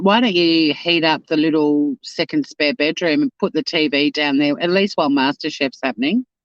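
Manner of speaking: ordinary delivery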